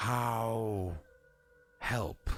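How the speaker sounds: very slow, low, deliberate, drawn-out "how". Voicing a character who introduces himself and offers help, very, very slowly. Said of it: "says very, very slowly".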